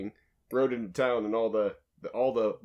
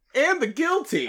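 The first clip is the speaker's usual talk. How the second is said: fervent, passionate, very high-pitched, loud cry; 6 dB louder than usual. Told there was no heart behind it, the actor redoes the line with more passion. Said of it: "say it with a little more passion".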